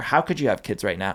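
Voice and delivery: normal talking voice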